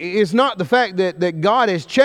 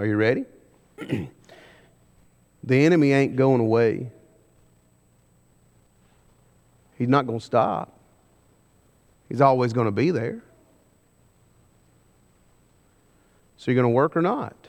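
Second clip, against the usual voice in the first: very low, thick put-on Alabama accent; 7 semitones lower, 4 dB quieter than usual. Speaker teaching a lesson from Nehemiah, delivering it in an Alabama accent. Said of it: "Let me say this in my best Alabama".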